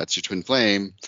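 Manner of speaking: normal talking voice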